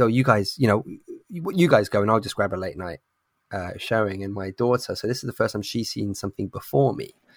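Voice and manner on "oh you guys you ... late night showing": ordinary talk, nothing marked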